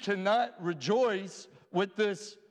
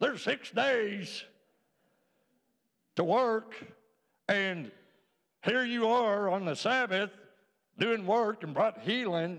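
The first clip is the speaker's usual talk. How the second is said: put-on cranky, grumpy old man voice. Retelling what the synagogue leader said about healing on the Sabbath, mock-grumpy old man voice. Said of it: "grumpy old man".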